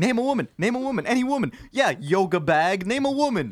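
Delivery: badgering, insistent, repeated high-pitched yelling. Retelling how a man kept yelling at a flustered woman: imitating a man yelling. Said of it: "he just kept yelling".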